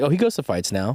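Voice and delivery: normal talking voice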